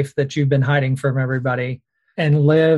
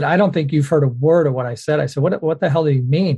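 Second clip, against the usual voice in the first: plain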